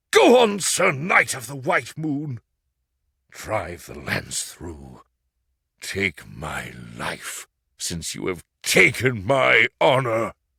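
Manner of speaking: deep voice as if from another world. Reading a beaten knight's plea to be killed: deep voice as if from another world. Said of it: "With a deep voice, as if coming from the other world".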